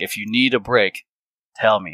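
forceful, intense, almost angry-sounding delivery. Telling the team to ask for a break, acting intense, almost mad. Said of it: "I give it in such an intense way, it almost seems like I'm mad".

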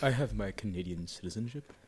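play-acted smug, self-satisfied, proud tone. Teasingly repeating another speaker's words: imitating a smug tone. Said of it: "a really detectable amount of smugness".

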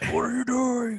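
goofy, very high, loud put-on voice.

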